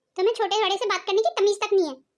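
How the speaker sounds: ordinary delivery, nothing marked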